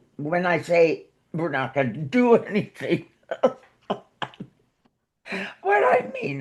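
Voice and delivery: words bubbling through laughter with swooping pitch. Telling about the family's Thanksgiving plans, laughing while talking. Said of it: "I'm sorry, I'm laughing".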